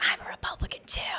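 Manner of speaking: soft, hushed whisper under the breath. Retelling how girls in the school bathroom confided: imitating someone whispering. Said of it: "whisper to me".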